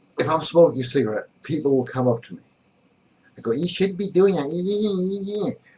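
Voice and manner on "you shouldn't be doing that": high, slow effeminate voice, drawing out "that". Retelling what people tell a smoker, imitating an effeminate voice. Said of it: "that same new effeminate voice that guys have".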